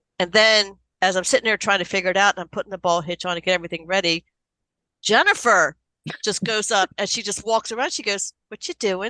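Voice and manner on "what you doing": put-on nonchalant tone, higher. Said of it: "like, nonchalant".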